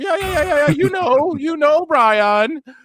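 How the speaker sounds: very high-pitched rambling babble. Recounting a moment, the speaker imitates Tony Khan getting all high-pitched. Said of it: "He just starts getting all high pitched".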